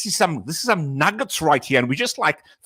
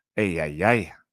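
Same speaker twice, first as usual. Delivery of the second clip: put-on raspy preacher voice, lower; 12 semitones lower, 4 dB quieter than usual. Imitating Pastor Furtick for the others: Pastor Furtick raspy voice. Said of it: "Pastor Furtick just makes his raspy voice".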